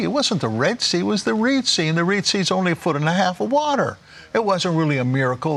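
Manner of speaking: high, mocking skeptical voice.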